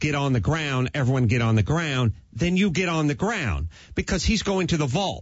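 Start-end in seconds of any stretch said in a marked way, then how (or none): none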